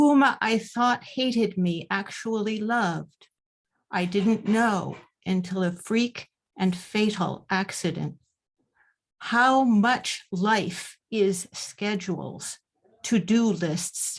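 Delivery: slow, unhurried reading. Introduced at a reading, a poet reads her short poem aloud, reading slowly. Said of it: "I will try to read it slowly".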